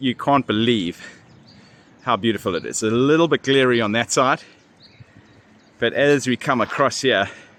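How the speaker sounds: winded, puffing and panting between words. Walking up a long hill while showing viewers the Alps, out of breath, panting. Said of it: "excuse me, panting".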